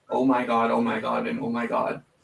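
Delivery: ordinary delivery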